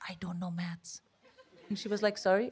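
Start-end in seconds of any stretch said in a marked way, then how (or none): 0.1-1.0 barely audible, very quiet whisper. Retelling a job interview, confessing to a sympathetic interviewer, retelling a whisper. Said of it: "I literally started whispering".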